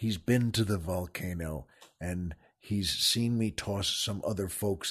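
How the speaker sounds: hushed, very soft, very quiet half-whisper. Host speaking while a guest lies fainted out cold nearby, half-whispering. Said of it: "I don't know why I'm whispering".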